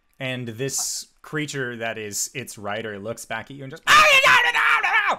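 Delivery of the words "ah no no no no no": very high, shrill, very loud drawn-out gibberish yelling. Narrating the scene, voice the creature's rider as it looks back at you: yelling. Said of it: "just like yelling at you in this unintelligible language".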